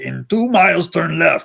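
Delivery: gruff, rough, creaky furry puppet-monster voice. Telling how the car navigation suddenly switched voices, doing a Cookie Monster voice. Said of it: "I hear Cookie Monster say".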